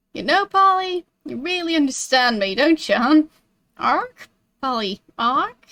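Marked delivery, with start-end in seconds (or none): 3.8-5.5 birdlike, squawking parrot-style voice. After asking Polly a question, the speaker answers with a parrot impression. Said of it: "a very convincing parrot impression".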